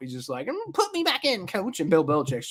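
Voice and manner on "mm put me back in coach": high-pitched, annoyed voice. Commenting on a benched quarterback asking to return: imitating pissed-off Mac Jones. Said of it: "Mac Jones is just pissed off".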